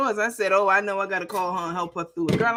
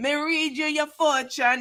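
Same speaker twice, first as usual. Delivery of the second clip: put-on Jamaican accent, pitched higher; 6 semitones higher than usual. Mimicking Miss Cleo's terrible accent while talking about real yardies, bad Miss Cleo impression, fake Jamaican accent. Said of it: "Her accent was terrible".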